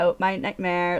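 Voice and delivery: put-on California surfer valley girl voice. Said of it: "that California Surfer Valley girl".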